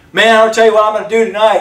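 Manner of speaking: loud, bragging. Imitating someone on the phone talking to everyone nearby: imitating bragging to the whole room. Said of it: "They're talking to everybody around them".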